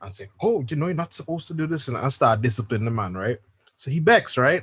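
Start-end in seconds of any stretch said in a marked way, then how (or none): 0.4-1.9 high, acted grown-up, mature scolding tone. Retelling a sister scolding her little brother: imitating someone acting all mature. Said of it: "trying to be all mature and sister".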